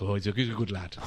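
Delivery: low Welsh accent in a bouncer-style voice.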